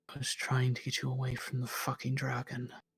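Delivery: barely audible, hushed, hardly voiced. Retelling her reply to his question, barely audible. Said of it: "like barely audible".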